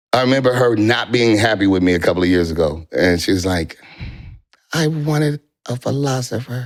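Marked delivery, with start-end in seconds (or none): 4.7-6.6 light, venomous voice, high-pitched and slow. Recalling a woman who was unhappy with the speaker: imitating her light, venomous voice. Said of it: "That's how she talks".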